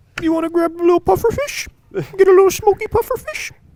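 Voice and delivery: shrill, very high, very loud mama dolphin voice. Voicing a mama dolphin talking to its baby: mama dolphin voice. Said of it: "As a mother dolphin".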